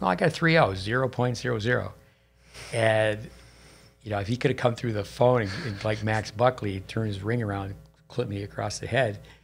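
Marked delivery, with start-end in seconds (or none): 0.0-1.9 mock cheeky, smart-aleck wise-guy tone. Retelling own answer about a report card: retelling a wise-guy remark. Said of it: "So I was a wise guy".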